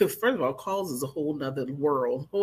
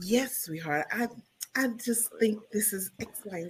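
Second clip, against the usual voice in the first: sultry, seductive put-on voice; 6 semitones higher, 3 dB quieter than usual. Showing how their phone manner sounds like a 900 caller: seductive phone voice. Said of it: "you get that seduction going on".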